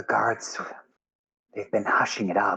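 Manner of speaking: hushed whispering voice. Game master voicing a woman telling the party about the guards, whispering. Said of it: "she whispers".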